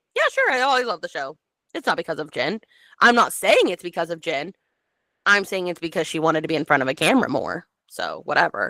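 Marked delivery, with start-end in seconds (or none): none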